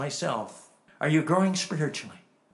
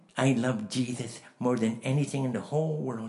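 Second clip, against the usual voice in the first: put-on lisp in a much lower voice; 4 semitones lower than usual. Speaker retells a man's testimony, imitating Cecil Blades's lisp. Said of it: "he lisped like this".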